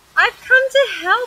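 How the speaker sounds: very high, loud cried-out call. Narrator reading Little Miss Helpful's line at Mr. Happy's front door, cried out. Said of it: "she cried".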